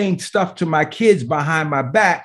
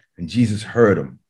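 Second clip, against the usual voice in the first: ordinary talk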